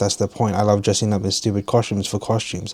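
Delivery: ordinary delivery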